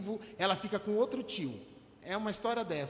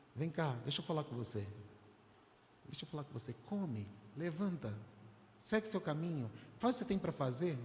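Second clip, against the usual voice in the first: meek, smooth, soft, low gentle voice; 4 semitones lower, 6 dB quieter than usual. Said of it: "com essa voz mansa e suave".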